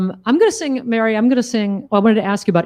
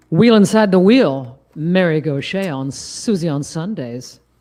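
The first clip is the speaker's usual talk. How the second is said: radio DJ announcer voice, FM host style; 4 semitones lower than usual. Speaker shows off for a co-host in an FM radio host voice. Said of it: "Do you like my F M radio host voice?".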